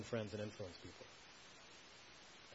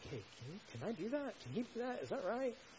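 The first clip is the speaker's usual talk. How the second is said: high, sarcastic mock disbelief. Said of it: "his use of sarcasm".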